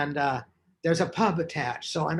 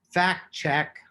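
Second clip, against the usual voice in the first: ordinary talk, nothing marked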